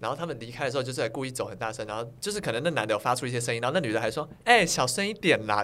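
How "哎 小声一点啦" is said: loud, slow, mocking, sneering sarcastic tone. Retelling what a loud moviegoer said while leaving: imitating a mocking tone. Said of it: "就是很嘲讽的那种语气".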